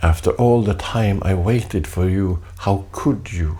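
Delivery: ordinary delivery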